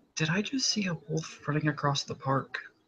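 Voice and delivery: very quiet, hushed, leaning-in half-whisper. Narrating a roleplay scene, one character leans in to another: half-whispering. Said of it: "he'll lean in and whispers to Matt".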